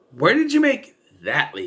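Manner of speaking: mock, high, swooping, incredulous tone.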